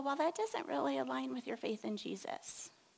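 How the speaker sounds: gentle, sweet-toned voice. Recalling what she once told the speaker, imitating her sweet, gentle voice. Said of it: "in her sweet, gentle voice".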